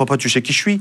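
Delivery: put-on, good-natured, joking, spoken through laughter. Retelling what the son said about private tutors: imitating son saying it laughingly. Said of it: "Mais en rigolant".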